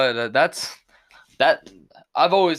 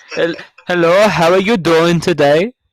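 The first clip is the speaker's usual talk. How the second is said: put-on Indian accent, very loud; 4 semitones higher, 8 dB louder than usual. Recalling a job pretending to be Indian, speaker greets someone in an Indian accent. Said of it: "Just pull up with the Indian accent".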